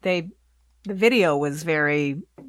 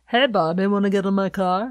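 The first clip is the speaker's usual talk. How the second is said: odd, put-on English accent; 2 semitones higher than usual. Speaker showing a friend an impersonation of Aqua, Aqua impression. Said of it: "an interesting English accent he had going on".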